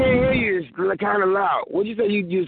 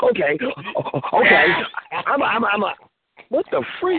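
play-acted, worked-up excited voice, sudden burst of energy. Mimicking how the other speaker just sounded: imitating Sean sounding excited. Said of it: "it sounded like you was really excited".

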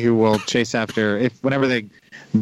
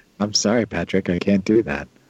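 put-on movie-robot voice, pitched lower; 3 semitones lower than usual. After a friend mocks his robot impression, the speaker tries a HAL impression. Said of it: "you can't be Hal".

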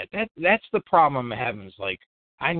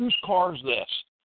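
put-on yelling, higher pitched; 5 semitones higher than usual. Retelling how a cop near the gate confronted a driver: imitating a cop yelling. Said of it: "and he yells".

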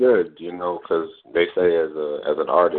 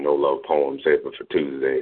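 plain

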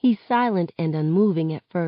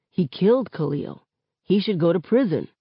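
usual speaking voice

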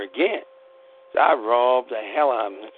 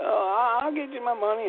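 pretend cowering, higher and quieter; 11 semitones higher, 5 dB quieter than usual. Retelling being robbed, imitating own fake cowering. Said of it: "I pretended like I cowered".

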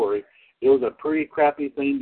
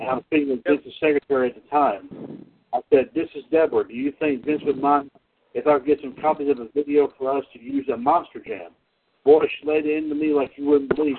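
normal talking voice

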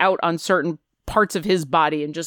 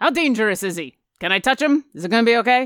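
put-on dwarf voice, higher; 3 semitones higher than usual. Voicing the dwarf armorer Valen Oxteen greeting the visitors: voicing Valen Oxteen. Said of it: "looks at you and says".

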